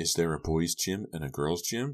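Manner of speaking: ordinary delivery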